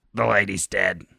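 play-acted cold, detached, unfeeling, uncaring voice. Voicing how a dead lady would say it about herself: imitating her cold, uncaring voice. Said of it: "That's how she would have said it about herself in her own uncaring voice".

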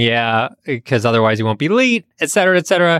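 ordinary talk, nothing marked

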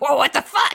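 stunned, shocked outburst. Retelling the detective reacting to a real gun: imitating the shocked detective. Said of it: "Kid is just like".

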